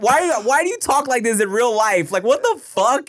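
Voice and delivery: high, loud, exasperated, disbelieving rant. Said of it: "And I was like".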